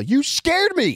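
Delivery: very high, loud, startled involuntary yell. Retelling nearly getting hit by a car: imitating own yell. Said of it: "My immediate involuntary reaction was to yell".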